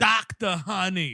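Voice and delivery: put-on broad Brooklyn accent. Mocking a film where Adam Sandler plays a doctor, doing his broad Brooklyn accent. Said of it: "this Brooklyn accent he's doing".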